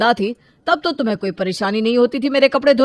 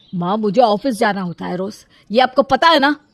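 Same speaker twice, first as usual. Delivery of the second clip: plain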